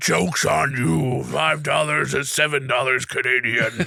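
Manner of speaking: low undead zombie monster voice. Retelling what a man said, quoting him in a zombie voice. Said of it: "Said in zombie voice".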